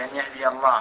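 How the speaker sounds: ordinary talk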